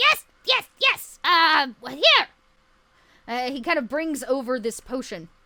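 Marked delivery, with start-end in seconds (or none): 0.0-2.3 high, loud, squawking creature voice. Voicing a flustered character who hands over a potion: squawking voice. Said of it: "he kinda squawks".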